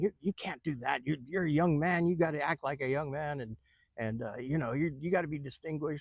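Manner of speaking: angry, mad, reproachful, stumbling delivery. Retelling the older lady scolding him afterward: imitating an angry scolding. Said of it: "she was really mad at me".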